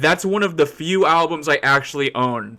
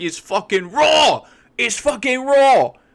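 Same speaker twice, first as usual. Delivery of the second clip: very high, shrieking, drawn-out, ranting scream; 9 semitones higher than usual. Describing a man with a bunch of TV shows, do a screaming Gordon Ramsay impression. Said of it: "and he screams. He's like".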